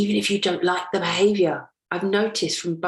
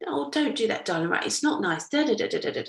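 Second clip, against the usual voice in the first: pleasant, lovely, nice tone; 3 semitones higher, 4 dB quieter than usual. Retelling their own new way of speaking: imitating own lovely tone. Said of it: "My mouth is delivering this lovely".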